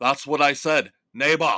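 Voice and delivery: loud, put-on Austrian accent. Arnold answers someone correcting how he says a word, Arnold Schwarzenegger impression. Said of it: "I can do Schwarzenegger a lot better".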